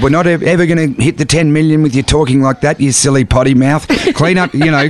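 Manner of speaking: ordinary talk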